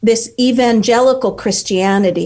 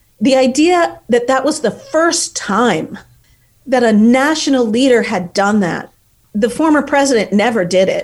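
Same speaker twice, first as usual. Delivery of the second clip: openly angry, anger plain in the voice. Speaker criticizing the former president, angry. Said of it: "you can hear the anger in my voice".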